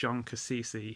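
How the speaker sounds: ordinary talk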